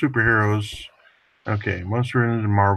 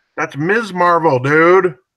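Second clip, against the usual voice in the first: loud, high-pitched, heated, argumentative yelling; 8 semitones higher, 8 dB louder than usual. Arguing with another person over comic book characters, the speaker is yelling in an argument. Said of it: "are you yelling at each other".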